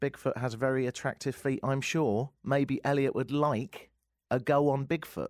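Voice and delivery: ordinary talk, nothing marked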